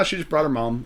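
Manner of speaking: mock casual, offhand delivery. Retelling how someone said a line: imitating a casual tone. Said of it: "the way he said it so casually".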